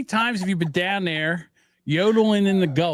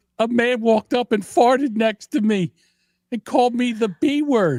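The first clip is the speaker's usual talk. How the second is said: mock crying, higher; 5 semitones higher than usual. Retelling what a crying customer says at customer service: imitating someone crying.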